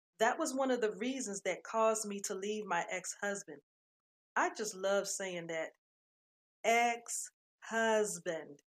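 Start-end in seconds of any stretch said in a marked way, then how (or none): 6.7-8.4 savoured word, stretched out very slowly. The speaker who loves saying this word says it very slowly. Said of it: "I had to say that very slow".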